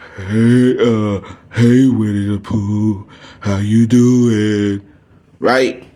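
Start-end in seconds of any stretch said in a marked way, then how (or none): 0.2-4.9 slow, gloomy, drawn out, pitch falling throughout. Acting out gloomy people, like a Winnie the Pooh character: gloomy Winnie the Pooh character voice. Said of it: "All down and all gloomy".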